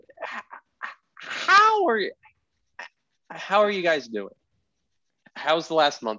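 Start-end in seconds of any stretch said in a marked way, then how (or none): 0.9-4.4 very high, put-on shtick voice. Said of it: "I don't know what shtick you're trying to pull".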